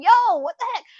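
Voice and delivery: very high, shrill, loud shrieking scream. Lyft driver retells a passenger in the back after slamming the brakes, retelling a passenger's scream. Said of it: "the passenger in the back was screaming".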